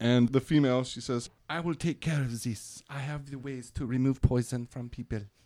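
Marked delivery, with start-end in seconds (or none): 1.5-5.2 comic cartoon-style French lilt. Voicing a healer who offers to remove poison: French accent like Pepe Le Pew. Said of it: "Is this Pepe Le Pew's daughter?".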